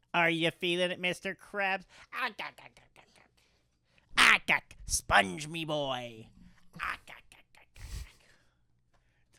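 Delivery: cartoon sponge voice, repeated gah sounds. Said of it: "I'm just doing my SpongeBob impression".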